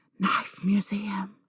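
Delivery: carrying, high, hushed stage whisper full of rapture. Retelling a reaction in the cinema, hands up: imitating a loud whisper. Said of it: "whispered loudly".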